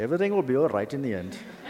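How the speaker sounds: loud, high-pitched Indian accent.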